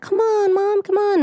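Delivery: tiny, sweet, very high innocent little voice. Retelling the Bambi hunter scene, Bambi calling to his mother: sweet innocent Bambi voice. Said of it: "Bambi has the sweetest, little, most innocent voice".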